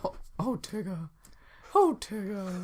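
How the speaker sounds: slow, drawn-out, high, swooping, sing-song character voice. Showing another speaker a practiced Winnie the Pooh impression. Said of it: "my Winnie the Pooh impression".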